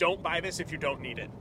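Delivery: normal talking voice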